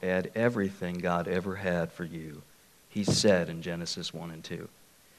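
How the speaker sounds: very gentle, low, soft Georgia drawl. Retelling advice from a man he sat down with, in a gentle Georgia drawl. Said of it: "in his very gentle Georgia drawl".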